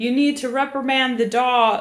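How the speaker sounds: harsh, cross, angry tone, acted. Retelling a man on the path turning to yell at the speaker, retelling an angry yell. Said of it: "he was yelling like".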